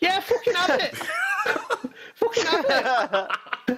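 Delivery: put-on high-pitched cheering Scouse accent. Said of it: "they're all Scousers".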